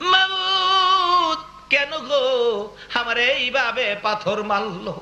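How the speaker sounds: high, slow weeping.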